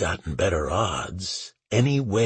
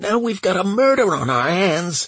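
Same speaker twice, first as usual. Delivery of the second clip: shrieking angrily, furious; 12 semitones higher, 7 dB louder than usual. Reading a woman's line in a novel, shrieking with rage. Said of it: "she shrieked".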